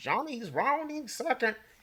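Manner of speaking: put-on very high old-time 1930s radio announcer voice. Explaining what old-time baseball broadcasts sounded like, in a 1930s baseball announcer voice. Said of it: "did just do that voice perfect".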